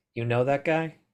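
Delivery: low-key, discreet, offhand private aside. Turning to a companion about a staring stranger, speaking quietly. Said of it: "I just quietly say to Harry".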